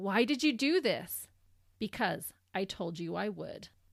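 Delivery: ordinary delivery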